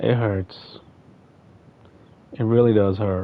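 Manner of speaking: crying while talking. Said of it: "I'm crying, like, really".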